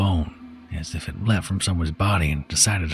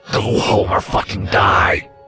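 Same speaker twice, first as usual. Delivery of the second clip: put-on loud, dark, violent drunken growl; 2 semitones higher, 6 dB louder than usual. Reading a monster's sudden outburst in a story: dark, growling, violent lunatic. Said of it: "suddenly sounds like a lunatic two bottles in, dark, growling, and violent".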